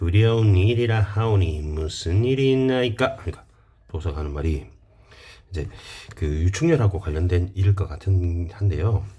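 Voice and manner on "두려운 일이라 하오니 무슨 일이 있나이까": sly, cunning, wheedling, ingratiating put-on voice. Telling a story and voicing 한담's line: sly, wheedling 한담 voice. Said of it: "한담 목소리 좀 간사하게 할게요".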